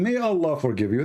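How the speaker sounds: ordinary talk, nothing marked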